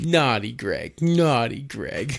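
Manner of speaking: mock baby talk voice. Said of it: "he does, like, the, the baby talk".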